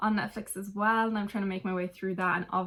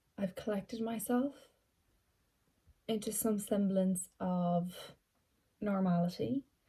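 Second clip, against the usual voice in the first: teary voice, much quieter; 4 dB quieter than usual. Speaker trying to collect themselves after finishing something, tearing up. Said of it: "I say as I'm tearing up".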